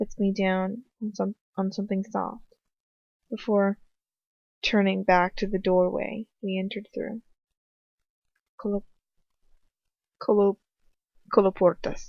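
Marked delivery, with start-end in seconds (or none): 8.6-12.1 "coloportas" pronounced with a Spanish accent. Narrating a story in first person, the speaker says a made-up word, Spanish accent. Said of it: "Like how I said that with a Spanish accent".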